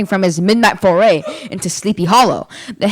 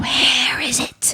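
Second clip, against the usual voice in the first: creature voice, dry, cracked, high whisper; 6 semitones higher, 5 dB quieter than usual. Narrator reading a tale, the creature whispering at a man's ear: low, cracked whisper. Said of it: "in a low, cracked voice, it whispered".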